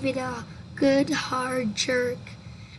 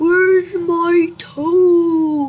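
very loud groan, "toe" drawn out; 5 semitones higher, 13 dB louder than usual. Reading a story aloud, a voice outside calls to the boy, groaning. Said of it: "it groaned".

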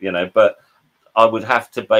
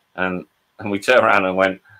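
usual speaking voice

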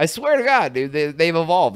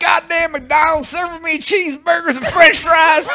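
shrill, loud, very high put-on southern twang; 13 semitones higher, 6 dB louder than usual. Showing how a southern twang makes anything sound racist, mock southern twang. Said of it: "If you put a southern twang on anything".

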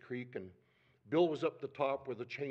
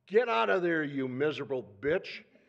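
very loud, booming, bellowing hollered yell; 2 semitones higher, 9 dB louder than usual. Retelling a yell at someone in a creek as a bear charges: retelling a yell. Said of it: "and I yell".

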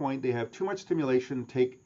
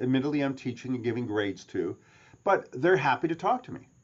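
ordinary delivery

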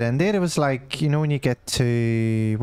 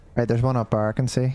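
ordinary talk, nothing marked

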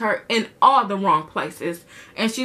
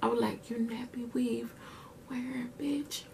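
hushed whisper, barely under the breath; 2 semitones higher, 16 dB quieter than usual. Telling y'all about a confrontation, repeating their own words in a whisper. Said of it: "y'all, I gotta whisper".

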